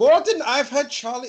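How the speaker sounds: put-on very high-pitched German accent. Retelling Hans talking to Gordon, the speaker does Hans with a German accent. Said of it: "He's German in this impression".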